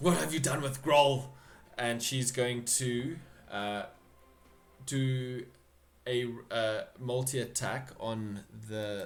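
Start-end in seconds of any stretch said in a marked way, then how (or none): 0.0-1.2 loud, fast, shouted hobgoblin voice. It's the hobgoblin's turn in the game, and she calls out: hobgoblin shouting. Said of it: "she shouts".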